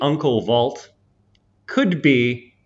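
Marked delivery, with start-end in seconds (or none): none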